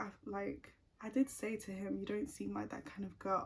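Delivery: ordinary talk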